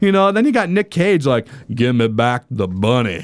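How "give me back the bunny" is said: put-on very low-pitched Southern accent. Mocking a movie's scenes, speaker does the line in a Nicolas Cage Southern accent. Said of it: "pretty good Nick Cage Southern accent".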